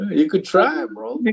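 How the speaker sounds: high, loud, teasing, sarcastic mock-encouraging tone.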